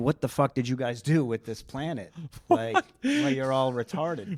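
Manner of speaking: mock pissed-off, upset tirade, swooping and rising. Describing a show's premise where Jesus comes back, mock-angry Jesus rant. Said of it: "He's pissed off, and he's like he's upset".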